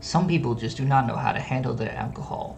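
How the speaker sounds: mumbled under the breath. Walking away after a refusal, muttering under breath. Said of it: "just like mutter under my breath".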